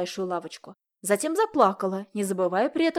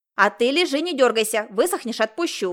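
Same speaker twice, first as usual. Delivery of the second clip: sharp, loud shouting, raised voice; 2 semitones higher, 5 dB louder than usual. The owner scolds her little dog for trying to wriggle free, shouting sharply. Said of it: "прикрикнула".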